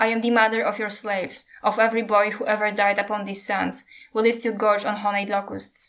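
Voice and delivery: plain reading voice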